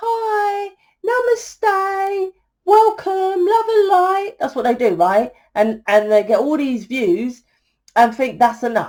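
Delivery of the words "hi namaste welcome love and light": very high, slow, silly guru voice, "hi" stretched. Mocking how spiritual leaders greet their viewers, in a high-pitched, stupid spiritual-leader voice. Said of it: "they just have that high-pitched, stupid voice".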